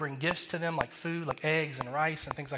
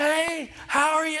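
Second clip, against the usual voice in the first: very high, loud, slow, drawn-out bellowing yell; 12 semitones higher, 7 dB louder than usual. Retelling how a man screamed a greeting at a deaf woman, imitating the screaming. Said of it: "just screaming at her".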